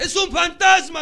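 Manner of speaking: very loud, high-pitched, terrified shout. Preacher acts out the people who see the Lord and cry out: retelling a frightened shout.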